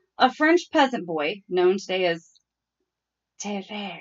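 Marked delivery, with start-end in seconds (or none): 1.5-4.0 whispering, lower. Reading out a boy's name from a case: whispering the name. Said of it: "I like how you have to whisper it".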